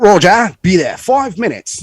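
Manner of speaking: put-on British accent. Retelling a radio reply from a guy answering his call for support, British accent. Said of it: "He's got a British accent".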